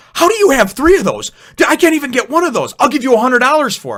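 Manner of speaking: very high, loud, shrill yelling. Retelling a lady confronting mom in a store: imitating a lady yelling. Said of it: "starts yelling at her and going".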